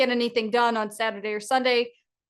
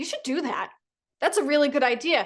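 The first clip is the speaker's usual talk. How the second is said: acted firm, forceful, emphatic, wholehearted delivery; 4 semitones higher than usual. Retelling how Ari urged them to do it: imitating Ari sounding forceful. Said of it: "you just sounded so forceful with it".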